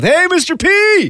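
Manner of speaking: shouting. Recalling running into someone at a Sobeys, retelling a yell. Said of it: "I just yelled".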